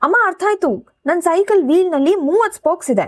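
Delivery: high, sudden, excited outburst. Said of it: "ಹಠಾತ್ ಕೂಗಿದ".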